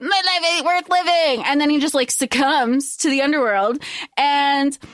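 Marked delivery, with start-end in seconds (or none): 0.0-1.4 mock crying, higher pitch. Retelling a story and voicing the man's words, imitating someone crying. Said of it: "he's crying".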